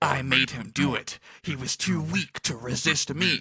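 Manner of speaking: creepy, ghostly voice. Narrator voicing Nuge as he continues, in an eerie Gipple voice. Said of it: "with his eerie voice".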